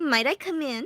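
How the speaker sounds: put-on nasal character voice. Voicing Clanice in a shared story scene, nasal Clanice voice. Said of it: "My voice is up my nose for Clanice".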